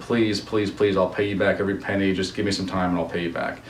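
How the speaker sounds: ordinary delivery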